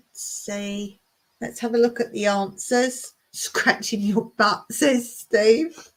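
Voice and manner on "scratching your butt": normal talking voice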